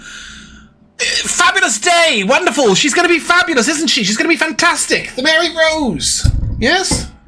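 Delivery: lively, rollicking, boisterous, very high-pitched. Game master voicing a character addressing the players, boisterous. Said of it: "he looks at you and".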